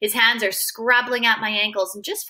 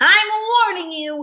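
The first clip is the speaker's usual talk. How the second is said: fierce, bold voice, loud and high; 8 semitones higher, 5 dB louder than usual. Freak, trying to stand up in a pile of coal, warns someone, fierce and bold. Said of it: "he says in that fierce, bold way he has".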